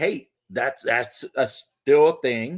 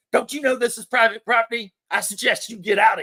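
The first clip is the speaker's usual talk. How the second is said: put-on higher, territorial voice with Eastern Kentucky accent; 8 semitones higher than usual. Describing a Kentucky man confronting people on his property: Kentucky guy impression. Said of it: "And that's the Kentucky guy".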